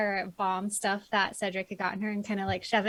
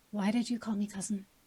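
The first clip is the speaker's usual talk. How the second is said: hushed, lowered voice like a private aside; 5 dB quieter than usual. In-character player asks a question meant only for one companion; lowered voice. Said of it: "I'm gonna lower my voice so hom- hopefully only Flix will hear".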